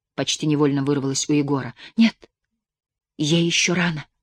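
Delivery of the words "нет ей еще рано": whispering, much slower. Narrating, the girl answers her half-asleep companion's question, whispered. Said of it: "шепотом ответила девочка".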